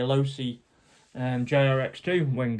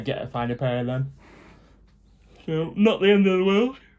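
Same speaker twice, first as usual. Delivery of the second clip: talking through a yawn, higher and louder; 4 semitones higher, 4 dB louder than usual. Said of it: "so sorry, I'm yawning".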